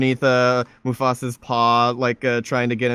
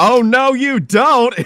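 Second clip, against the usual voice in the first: very high, very slow, loud, drawn-out gloating; 12 semitones higher, 7 dB louder than usual. Retelling a parody video scene, pushing someone off a hill: Frank Reynolds voice. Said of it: "it's, uh, Frank Reynolds from It's Always Sunny in Philadelphia with the plank of wood, be like".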